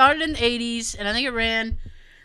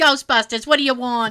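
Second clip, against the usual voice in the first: put-on Jersey receptionist voice, louder; 4 dB louder than usual. Imitating while watching a woman on TV: Janine voice. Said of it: "she sounded just like Janine".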